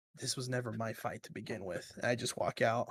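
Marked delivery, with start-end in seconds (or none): 0.2-1.9 barely there, hushed half-whisper under the breath. A player's character, walking out of a fight, half-whispering under breath. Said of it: "I whisper under my breath".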